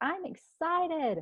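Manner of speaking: gleeful yell, very high, climbing in pitch. Teaching someone how to yell with glee: excited yell, rising inflection. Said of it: "inflections that go up".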